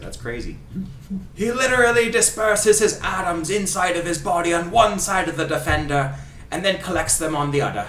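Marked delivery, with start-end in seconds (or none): 1.4-7.9 fake Scottish accent, delivered like a sports commentator. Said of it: "This is so much fun doing his accent".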